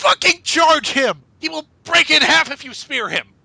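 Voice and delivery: mock shrill, high-pitched, furious yelling. Retelling yelling at a wrestler on the ramp during a match, retelling own yelling. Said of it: "and I'm yelling at him".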